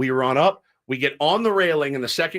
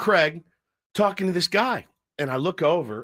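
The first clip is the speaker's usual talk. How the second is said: normal talking voice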